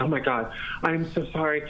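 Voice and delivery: put-on frantic panic. Retelling a woman who came up to him in the basement, imitating frantic panic. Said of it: "was frantic and was like".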